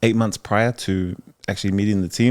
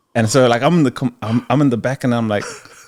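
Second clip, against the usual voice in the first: ordinary delivery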